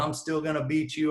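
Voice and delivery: play-acted light, held-back yell. Retelling what an attacker shouted: imitating someone yelling.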